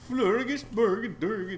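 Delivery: put-on, loud, high Swedish-sounding nonsense babble. Showing how one always wants to sound Swedish: Swedish Chef voice. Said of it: "like the Swedish, Swedish chef".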